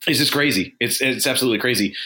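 choked-up voice catching with emotion. Talking about a wrestler's death at thirty-eight, choked up. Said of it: "I'm getting a little choked up here myself".

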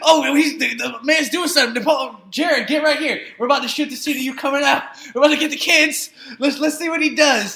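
high, loud excited film crew voice. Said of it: "they were probably like".

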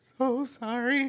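acted, high-pitched, tearful crying voice. Retelling a visitor's apology while she cried: imitating someone crying. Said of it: "she was just, like, crying".

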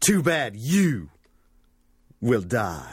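slow, hammy, drawn-out line reading. Quoting a movie line to the others: hammy Sindel line delivery. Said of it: "Sindel just hams it up, but in the worst way".

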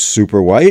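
plain

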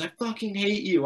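high, furious, full-throated scream at the top of the lungs. Retelling how the mother screamed with friends over: imitating someone screaming. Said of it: "shouting at the top of her lungs".

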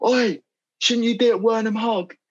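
shrill, very high, cheeky heckling shout. Speaker retells calling out a window at a famous person, retelling own shout. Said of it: "And I shout".

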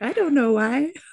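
put-on tiny four-year-old child voice, very high. Speaker imagining her 4-year-old's reply in her little voice: little child voice. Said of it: "my 4-year-old in her little voice".

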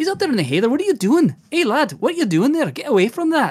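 high-pitched Scottish dwarf voice. Speaker demonstrates voicing a dwarf character out in the heather, Billy Connolly-style Scottish dwarf. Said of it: "if it's a dwarf and he's talking".

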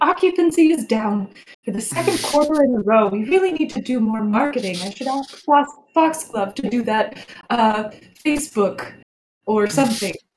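mumbled, worried running talk to herself. Imagining a character muttering over her guests and ledgers, Eloise mumbling to herself. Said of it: "She's probably mumbling like".

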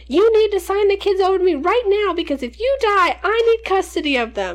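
full-blown panic, very high-pitched, loud scream. Retelling how grandma screamed at mom as she jumped in the water, imitating grandma screaming. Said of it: "my grandma is screaming at her".

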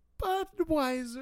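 very high, light, loud, reluctant cringing squeak. Imitating how King says a word, very light, cringing as he says it. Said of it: "it makes it sound like he is cringing as he says it".

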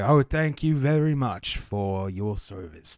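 put-on grateful, elderly village elder voice. Voicing the town elder Erengard thanking the party: Erengard voice. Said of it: "Now he sounds like that".

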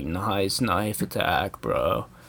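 slow, chill, laid-back surfer-dude drawl. Recalling misreading a headline, saying it like a surfer would: cool surfer bro voice. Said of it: "saying it like a cool surfer".

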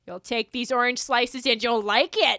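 overbearing, pushy Minnesota mother character voice. Suggesting a character the other speaker would be, in an overbearing Minnesotan mom voice. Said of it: "Overbearing Minnesotan mom".

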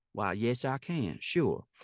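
drawling American Southern accent. Showing off accents used in auditions, answering in a Southern drawl. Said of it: "can you actually do that in a Southern drawl?".

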